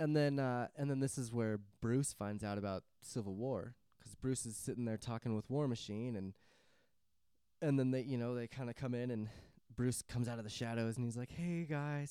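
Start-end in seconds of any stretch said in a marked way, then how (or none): 11.3-12.1 play-acted meek, timid, nervous, scared voice. Retelling a movie scene where Bruce comes out of the shadows: imitating timid, scared Bruce. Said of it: "He's all timid and scared".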